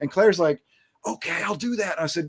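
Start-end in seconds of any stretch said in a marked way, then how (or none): 1.1-2.0 hushed, soft, high-pitched whisper. Retelling a coworker whispering back on the phone: imitating a coworker whispering. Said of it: "She whispered".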